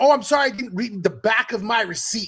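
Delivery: high, furious, all-out angry outburst. Retelling a mother's fight with a store clerk over fees: imitating mom losing it. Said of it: "goes crazy on this kid".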